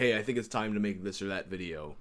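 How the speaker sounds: ordinary talk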